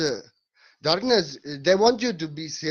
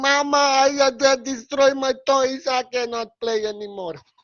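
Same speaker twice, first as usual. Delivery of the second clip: mock tearful little child, slow, sobbing plea; 7 semitones higher, 4 dB louder than usual. Telling the Krishna story, voicing Krishna crying to Mama. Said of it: "Krishna crying".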